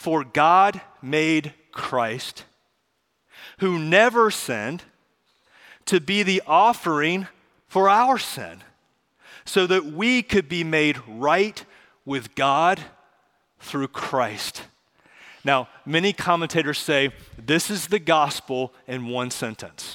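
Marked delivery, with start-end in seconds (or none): 0.0-14.6 slow reading with long pauses between phrases. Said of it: "I'm gonna read it slowly".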